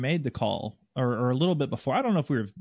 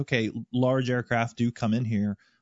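ordinary delivery

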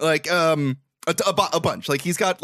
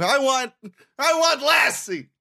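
put-on, high, very drawn-out crying-boy voice; 9 semitones higher than usual. Retelling a movie scene where Joe starts crying: imitating a crying boy. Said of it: "Joe starts crying, and he's saying".

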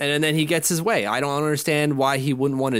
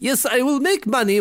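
terrible put-on Russian accent, pitched very high; 10 semitones higher than usual. Voice the thoughts of a man weighing whether to stay another three years, in a terrible Russian accent. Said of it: "That's a terrible Russian accent".

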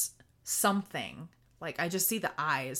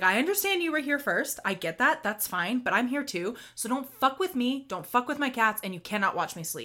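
really loud, pitched-up, acted-out delivery; 6 semitones higher, 4 dB louder than usual. Retelling telling a ghost in an empty house to leave her alone: retelling saying it loudly. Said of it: "really loudly, I was like".

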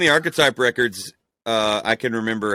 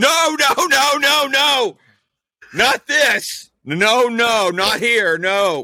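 play-acted very high, very slow, drawn-out shrieks; 12 semitones higher, 4 dB louder than usual. Recounting a pastor running out to stop their show, imitating someone screaming. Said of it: "started screaming".

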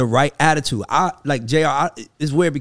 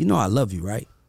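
quiet, hushed half-whisper; 4 semitones lower, 5 dB quieter than usual. Retelling a story, the speaker repeats a collaborator's words to them, imitating a half-whisper. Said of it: "He looks over and whispers to me".

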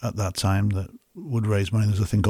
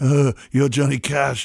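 put-on awestruck, starstruck fan voice, pitched higher; 5 semitones higher, 3 dB louder than usual. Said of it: "totally the Chris Farley figure".

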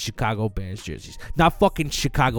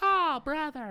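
put-on very high commercial kid voice; 6 dB quieter than usual. Acting out a kid in an imagined gum commercial: kid in a commercial. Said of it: "some kid like".

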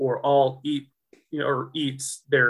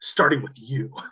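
playful fake menacing voice. Retelling a joking threat made while staring someone down: imitating a mock-menacing threat. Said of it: "he looks me dead in the eyes".

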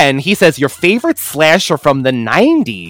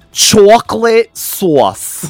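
own thick native accent, heavily laid on, pitched up; 6 semitones higher than usual. Saying a promised phrase for a friend of the show: thick accent. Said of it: "in my thick accent".

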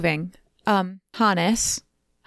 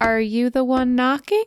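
put-on creepy, scary little kid voice; 3 semitones higher than usual. Narrating a scary story, the child at the door speaks in a scary child voice. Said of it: "like to the scary child voice will ask".

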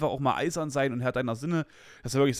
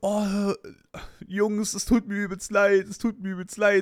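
mock laughing while speaking, higher; 7 semitones higher than usual. Retelling how a woman laughed and apologized to the guys, imitating her laughing apology. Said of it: "Und sie halt übelst gelacht und sie so".

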